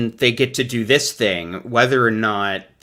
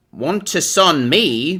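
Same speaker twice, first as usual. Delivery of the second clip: put-on joke Cockney accent, higher pitch; 5 semitones higher than usual. Reading out a viewer's super chat for a joke: funny put-on Cockney accent. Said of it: "by doing a funny accent".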